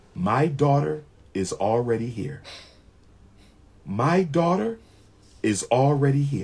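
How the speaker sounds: put-on cold, level, flat, emotionless monotone. Retelling a woman's reply about the baby's birth, imitating a flat, emotionless voice. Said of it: "with no emotion at all".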